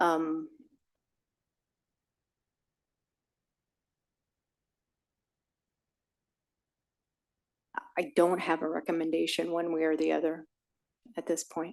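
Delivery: worn-out, failing voice, giving out. Apologizing that it's very late during an ordinance discussion, clearly losing voice. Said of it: "I'm clearly losing my voice".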